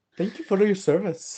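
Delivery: put-on Indian accent. Retelling thanking customers at the line: put-on Indian accent. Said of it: "my Indian accent".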